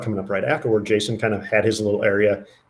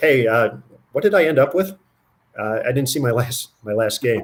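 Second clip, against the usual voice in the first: put-on laid-back, offhand, very nonchalant casual tone; 3 semitones higher than usual. Retelling a bowler asking his score right after finishing: nonchalant, imitating Norm. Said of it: "just real nonchalant".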